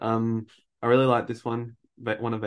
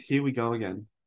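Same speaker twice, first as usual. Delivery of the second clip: ordinary talk, nothing marked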